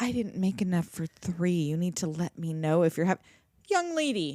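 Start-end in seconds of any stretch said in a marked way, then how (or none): 0.0-3.2 put-on snooty, snippy, put-upon scolding tone. Retelling what Pam said to the teen: imitating a snotty Pam.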